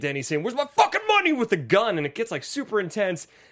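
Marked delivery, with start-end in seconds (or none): 0.4-1.3 high, loud mock yelling. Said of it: "just starts yelling".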